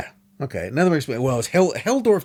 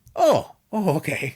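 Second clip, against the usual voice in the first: relieved, easing-off sound with raised pitch; 6 semitones higher than usual. Retelling how a Nazi official reacted to an explanation: imitating Helldorf sounding relieved. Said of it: "So relieved".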